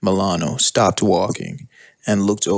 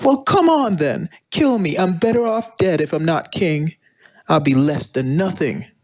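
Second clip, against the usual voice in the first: very high, shrieking, thrashing tantrum screaming; 10 semitones higher than usual. Reading a story aloud, a defeated queen dares her children: screaming in a tantrum. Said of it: "in a tantrum and screamed".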